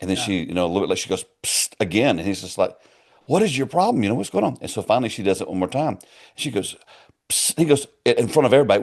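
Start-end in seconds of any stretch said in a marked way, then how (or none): 3.3-4.6 acted-out irritated preacher voice, very high-pitched. Telling of a preacher whose wife keeps going psst: imitating an annoyed preacher. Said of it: "he's very annoyed at her".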